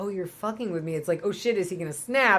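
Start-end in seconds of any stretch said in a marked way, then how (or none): 0.0-0.9 put-on quiet menacing tone, much quieter. Describing an intimidating man who feels fooled with, retelling a quiet menacing line. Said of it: "when he gets quiet and goes".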